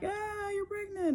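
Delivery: high, slow, excited voice. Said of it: "it wasn't like".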